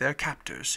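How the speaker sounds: ordinary delivery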